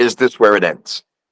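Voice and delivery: ordinary talk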